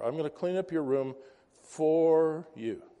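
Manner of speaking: heavy stress on the word for. Showing which word is the active word in a sentence: stress on for. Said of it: "The active word is for".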